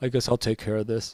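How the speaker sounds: muttered under breath. Retelling what the man with the belt says before he starts talking, muttered under breath. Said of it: "under his breath he goes".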